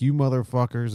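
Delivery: mock furious, loud, high angry outburst. Retelling a character charging into a room, imitating an angry outburst. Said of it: "and she's all angry".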